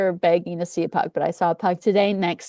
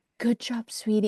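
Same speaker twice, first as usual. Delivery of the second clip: mock mutter under breath, quieter; 2 semitones higher, 6 dB quieter than usual. Retelling what a quiet family said to their runner: imitating someone muttering under their breath. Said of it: "Under their breath".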